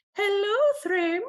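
very high, silly, squeaked voice. Imagining Thor greeting Thrym while disguised as a bride: silly Thor voice. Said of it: "doing, like, a silly voice".

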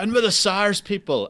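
loud, high shout. Retelling a man at immigration who kept calling out, imitating someone shouting. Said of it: "And he kept shouting".

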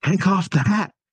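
very high-pitched, shrill yell. Retelling how dad reacts while watching a movie: imitating dad yelling. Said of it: "he just yells".

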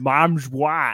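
lisp, put on mockingly. Retelling how an actress said a line, imitating an actress's lisp. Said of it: "'cause it's like".

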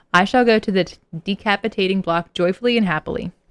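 ordinary delivery

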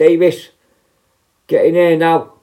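loud slow shout. Retelling how the boss called them in: imitating a boss shouting. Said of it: "she shouts".

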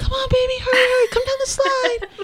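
mock, very high, loud, urgent yell. Retelling calling up to her at the top of a slide: retelling a yell. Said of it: "yelling up".

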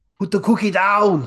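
loud, high-pitched, tough action-movie hero voice. Trading stock impression phrases at the end of a podcast, doing an Arnold impression. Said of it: "I'm just doing Arnold now".

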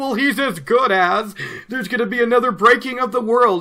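shrill, loud, full-on screaming outburst. Retelling how readers reacted to the dragon getting out; imitating someone screaming.

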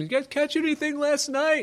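mock, very high, hollered shout. Retelling how a stranger on the shore calls out to fishermen: imitating someone shouting. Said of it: "he shouts out to them".

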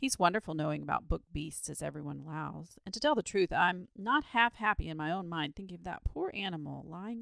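ordinary delivery

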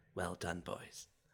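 very quiet, hushed half-whisper. Acting out a character removing fork hands: half-whispering in character. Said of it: "while whispering".

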